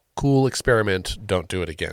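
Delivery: ordinary talk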